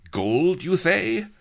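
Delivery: greedy-sounding lisp, high and loud. Narrating a story, reading Don Lardo's line, lisping and greedy. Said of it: "Lisped Don Lardo greedily".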